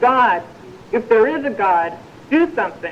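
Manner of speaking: ordinary talk, nothing marked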